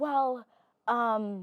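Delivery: mock stammering voice. Retelling a man's reply in a poetry class: imitating someone stuttering. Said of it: "and keeps stuttering".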